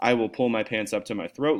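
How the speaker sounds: ordinary talk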